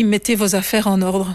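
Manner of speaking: ordinary talk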